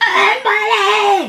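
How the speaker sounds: terribly loud, very high, shrill scream. Recalling the Drill Sergeant's order to lean over and scream, retelling a loud scream. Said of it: "Which actually really louder than that".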